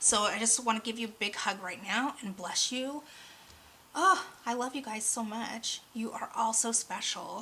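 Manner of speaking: voice cracking, breaking with emotion. Speaking to listeners, the speaker's voice is cracking with emotion. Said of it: "So if my voice is cracking".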